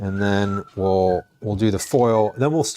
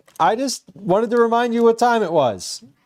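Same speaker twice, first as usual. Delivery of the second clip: very high, loud yell calling out; 12 semitones higher than usual. Speaker breaks off a conversation to yell upstairs to their son, yelling upstairs. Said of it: "I'm yelling upstairs to my son".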